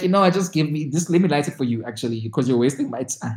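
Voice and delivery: ordinary talk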